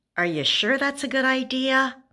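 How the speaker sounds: play-acted little girl voice, high, deeply doubtful. A mother quotes her little daughter's frequent question, imitating a doubtful voice. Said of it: "in a very doubtful voice".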